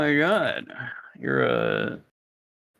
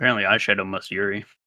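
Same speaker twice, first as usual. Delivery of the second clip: usual speaking voice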